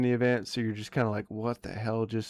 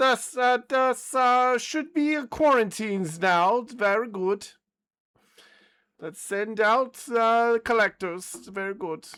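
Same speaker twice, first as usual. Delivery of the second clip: very high, shrill German evil mad-scientist voice; 12 semitones higher, 5 dB louder than usual. A game master voices a character for the players, German evil scientist accent. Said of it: "Very like German evil scientist".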